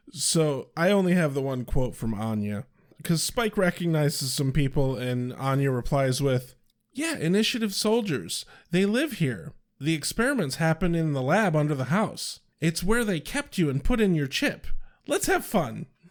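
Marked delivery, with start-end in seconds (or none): 6.9-15.8 overdone, exaggerated, animated, over-expressive inflection. Sharing the quote of the day, the speaker reads a character's line with exaggerated inflection. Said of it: "I put way more inflection into it than Anya did".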